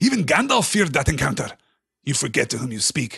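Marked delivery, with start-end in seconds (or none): 2.0-3.2 firm, stern, severe. Aragorn answers Gimli's frightened question, sternly. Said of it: "said Aragorn sternly".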